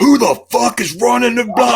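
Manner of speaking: play-acted, high, loud, out-of-control furious shouting. Retelling how Bill Cosby grabbed the open mic: imitating furious yelling. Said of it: "he's going fucking crazy".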